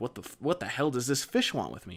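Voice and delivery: put-on frantic, panicked, freaked-out outburst. Retelling a younger brother's reaction to a fish: imitating someone freaking out. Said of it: "he starts kinda freaking out".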